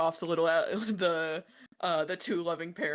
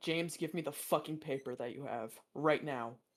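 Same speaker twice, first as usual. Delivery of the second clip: seething, enraged, furious delivery; 2 semitones lower, 5 dB quieter than usual. Voicing Ezra demanding the paper from James: furious Ezra. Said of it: "Ezra's fucking pissed".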